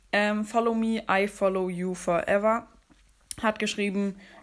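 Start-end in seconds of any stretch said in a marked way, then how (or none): none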